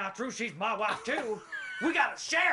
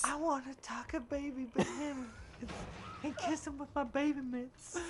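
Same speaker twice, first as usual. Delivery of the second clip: soft, ladylike, put-on lady's voice; 3 semitones higher, 6 dB quieter than usual. Prompted by another player to repeat a silly line, speaking in a lady's voice. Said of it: "In a lady's voice".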